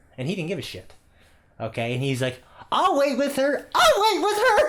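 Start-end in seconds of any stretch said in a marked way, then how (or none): 2.8-4.7 very high-pitched, rising, climbing, raised voice. Quoting a girl's dad who said it twice, in a high-pitched voice. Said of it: "he says it twice in a high pitched voice".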